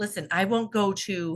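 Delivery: plain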